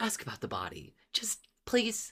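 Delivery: mocking, saccharine, sickly sweet, high and soft. Recalling a woman's line, imitating a mocking sickly-sweet tone. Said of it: "mocking, sickly sweet little tone she took".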